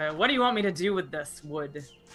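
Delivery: over-the-top, loud, exaggerated put-upon exasperation. Voicing a character rolling her eyes at an order: exaggerated eye-rolling exasperation. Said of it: "makes a show of rolling her eyes".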